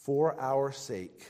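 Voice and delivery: slow, measured reading. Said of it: "I'm gonna say this slowly".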